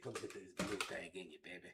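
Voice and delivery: put-on very soft, low, hushed freaky old man murmur. Quoting what old men used to say: imitating a freaky old man.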